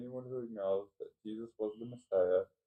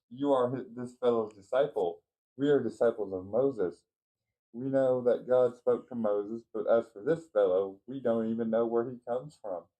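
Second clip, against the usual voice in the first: plain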